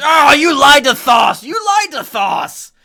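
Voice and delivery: piercing, shrill, very high, very loud devil scream. Voicing a stabbed bearded devil as it screams: devil screaming. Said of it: "and then it just screams".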